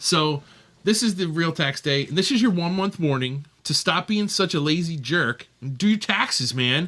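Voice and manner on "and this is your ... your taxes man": ordinary delivery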